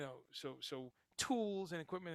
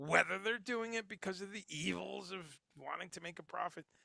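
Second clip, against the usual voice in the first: mocking, tongue-in-cheek, sarcastic aside tone; 3 semitones higher than usual. Talking about why companies make products like these: sarcastic tone. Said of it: "I say sarcastically".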